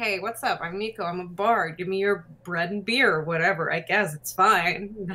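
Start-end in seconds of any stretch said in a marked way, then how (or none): 0.0-3.1 laid-back, easygoing, casual bard voice. Contrasting a casual bard with a grander manner: casual bard voice. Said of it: "less like".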